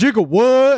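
mock, very high, screamed hype-man call. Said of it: "does the [name] shit and goes".

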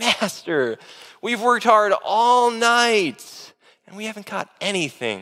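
fed-up, exasperated, drawn-out complaining tone. Retelling Peter's reply to Jesus after a night of work, Peter's exasperation, acted out. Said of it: "You can almost hear the exasperation in Peter's voice".

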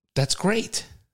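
genuinely earnest, sincere, breathy whisper. Reading a phrase from a list as asked: sincere. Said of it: "say that s-, sincerely".

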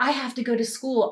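fed-up, angry, curt, blunt, snapped delivery. Recounting finally snapping at a persistent man on the way to school, retelling an angry retort. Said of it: "I finally got so mad".

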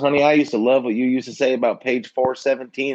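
put-on Southern-accented speech.

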